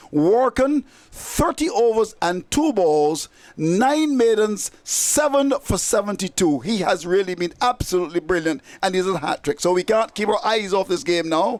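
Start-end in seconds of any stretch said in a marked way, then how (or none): 0.1-6.6 slow, deliberate, carefully spelled-out delivery. A cricket commentator reads out a bowler's figures, said slowly. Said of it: "I'll say it slowly".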